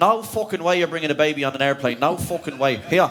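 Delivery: ranting in a mock Dublin accent. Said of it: "Now, that's how you".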